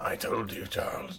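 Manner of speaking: very soft, breathy, nearly whispering delivery. Imagining an actor cast as Magneto saying a line: Jeremy Irons voice. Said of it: "I can't do it, Jeremy Irons".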